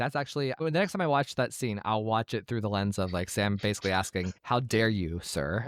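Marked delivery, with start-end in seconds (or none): 4.4-5.7 drawn-out, very slow, cheesy sitcom delivery. Imitating a character's indignant question: Full House tone. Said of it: "In a very, like, Full House tone".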